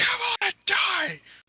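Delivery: raging, furious, shrill, high-pitched scream. Playing a raging barbarian, screaming in an enemy's face: furious scream. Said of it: "And I just scream at his face".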